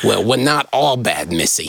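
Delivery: put-on low, old-time tough-guy gangster voice. Retelling a story's line, speaker says it like the gangster, gangster voice. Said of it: "you have to say it like the gangster".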